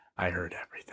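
pointed pause, then weighty, emphatic delivery. Retelling what mom said after stopping for emphasis: imitating mom's emphatic pause. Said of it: "she stopped for, like, emphasis and was like".

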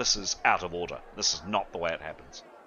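very low, hushed muttering. A narrator voices two guards muttering to each other: quiet muttering. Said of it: "the two guards kind of quietly muttering".

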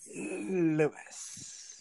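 heavy stress on L, S in Lewis. Recalling how Maddie used to say an old boyfriend's name, imitating Maddie stressing L and S in 'Lewis'. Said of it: "Big emphasis on the L and S".

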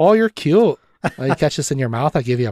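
put-on thick, deep Dakota accent. Quoting a film's characters, imitating a deep Dakota accent. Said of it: "really deep Dakota accents that everybody's doing".

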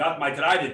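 clumsy, bad, fake Austrian accent. Picturing Arnold Schwarzenegger as king of the mermen, Arnold Schwarzenegger accent. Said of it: "That's not a good accent".

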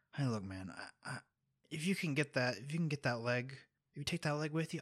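hushed character whisper. Storyteller voicing a man who leans in to the listener, whispering in character. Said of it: "He sort of whispers to you".

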